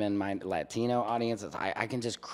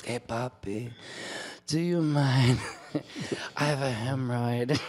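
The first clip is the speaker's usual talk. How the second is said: very slow, drawn-out woman's voice; 3 semitones higher than usual.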